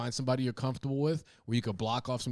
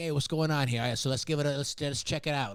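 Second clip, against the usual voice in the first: put-on thick, heavy New York accent; 3 semitones higher than usual. Recalling workers who came to the family house, imitating their heavy New York accent. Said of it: "really comforting to hear like heavy New York accents".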